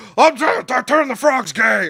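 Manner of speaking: very high, very loud, slow, shrill stammering yell. Retelling a podcast moment, doing an Alex Jones impression. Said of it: "Rogan would do his Alex Jones impression".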